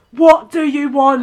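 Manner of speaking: put-on Essex accent, loud and drawn out. Speaker acts out a bit from a funny video for the others, essex accent. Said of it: "The Essex one's really funny".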